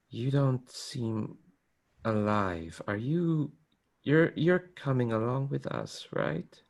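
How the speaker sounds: spectral, eerie, unsettling ghostly voice. Describing a stranger pressing close in an alley, quiet voice. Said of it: "quiet voice just going".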